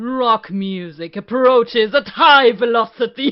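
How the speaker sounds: booming, very loud, villainous evil voice. Trying out a line written for them, in an evil voice. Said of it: "This evil".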